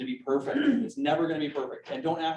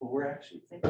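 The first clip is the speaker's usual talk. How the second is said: mock-timid, hesitant, quieter and faster; 6 dB quieter than usual. Acting out how hesitant home sellers talk, imitating a timid seller. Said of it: "They'll say it timidly".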